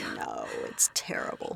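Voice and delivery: low, creaky, mock-tragic whisper.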